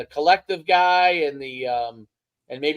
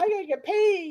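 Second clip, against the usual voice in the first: put-on, very high-pitched whining voice; 14 semitones higher than usual. Acting out somebody who goes on about getting paid, in a put-on high-pitched whining voice. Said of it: "high-pitched voice and whining".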